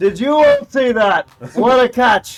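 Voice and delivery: said very loudly. Having flown to the other side, calling out to everyone very loudly. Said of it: "So you say that very loudly".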